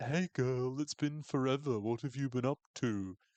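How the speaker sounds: annoying, obnoxious chattering voice. Retelling a scene of greeting at a reunion: imitating an obnoxious former classmate. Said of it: "impersonates a hypothetical obnoxious former classmate".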